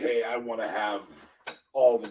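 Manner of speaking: ordinary talk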